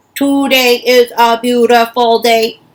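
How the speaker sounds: very loud, flat, mechanical robot monotone. Leading listeners in saying a phrase different ways, this time: robot voice. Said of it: "as if we're robots".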